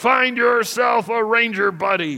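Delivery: loud growl. Speaker quotes the man who gave them their orders, retelling a growl. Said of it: "he growled".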